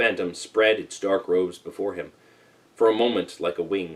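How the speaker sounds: usual speaking voice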